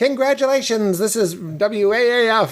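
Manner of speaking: very high, fake radio announcer voice. Retelling prank calls to businesses, the speaker poses as a radio station: pretending to be a radio station. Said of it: "I'd pretend to be some radio station".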